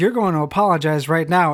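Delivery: short-tempered, irritable. Narrating, the speaker voices a guard who draws his sword on the group: short-tempered.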